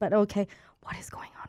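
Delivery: low, hushed whisper.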